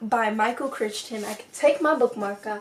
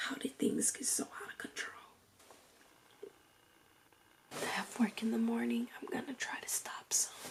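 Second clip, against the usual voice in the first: hushed, much quieter whisper; 15 dB quieter than usual. Late at night, speaker deciding to stop for the night, whispering. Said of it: "I'm whispering because it's so late".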